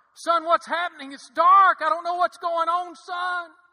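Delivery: desperate, panicked crying out. A speaker retells how a father screamed to his son: retelling a scream. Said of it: "he started screaming in that room".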